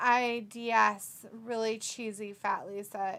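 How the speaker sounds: ordinary talk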